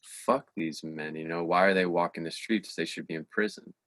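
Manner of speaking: ordinary talk, nothing marked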